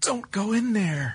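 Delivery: frightened, scared, very high-pitched voice. Showing how voice actors vary one line, say it scared. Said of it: "say it like you're scared".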